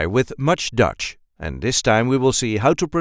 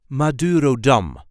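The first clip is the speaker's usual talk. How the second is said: Madurodam with gentle, light stress on final syllable dam. Showing how to pronounce a place name: light stress on last syllable DAM. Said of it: "light emphasis on the last syllable".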